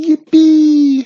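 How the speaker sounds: very high, very loud, piercing shrill squeal. A narrator voicing a witch leaving her rival far behind, squealing. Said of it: "She squealed".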